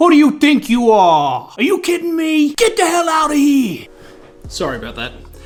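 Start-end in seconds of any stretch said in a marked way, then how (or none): 0.0-3.9 bad put-on New Jersey accent, much higher, louder. Demonstrating the worst possible rejection, in a very bad New Jersey accent. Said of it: "with a very bad New Jersey accent".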